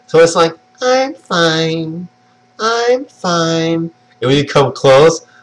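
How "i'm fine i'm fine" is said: very slow, drawn-out robotic machine turret voice. Describing a game mod where the witch has turret sounds, imitating a robotic turret voice. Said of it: "the witch has GLaDOS and like the turret sounds".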